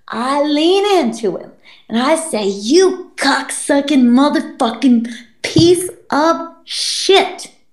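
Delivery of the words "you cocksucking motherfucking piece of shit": mock furious, angry whisper. Retelling what they said into their brother's ear: retelling an angry whisper. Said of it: "I'm like anger whispering it into him".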